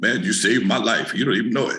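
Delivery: put-on deep male voice. Retelling what a man at a hamburger stand said to him, in a deep voice. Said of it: "Brother walked up to me with a deep voice".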